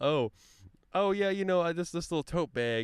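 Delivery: put-on upper-Midwest Wisconsin accent. Retelling how a teacher talked: imitating Miss Allenson's Wisconsin accent. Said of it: "her, like, Wisconsin accent".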